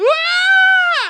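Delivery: very loud, shrill, high, long drawn-out scream. Describing the speaker's mother screaming during night terrors, imitating her scream. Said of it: "You'll just hear her scream like".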